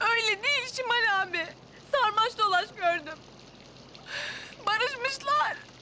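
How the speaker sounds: very high, tearful, crying through the words. In a drama, asked why they're crying, answering şimal, crying. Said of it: "Niye ağlıyorsun?".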